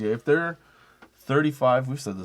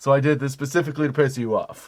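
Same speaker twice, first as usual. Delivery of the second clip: plain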